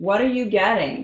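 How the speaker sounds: called-out shout from another room, across the house. Retelling calling out to a husband rummaging in the kitchen: imitating a holler. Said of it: "I'll holler and I'll be like".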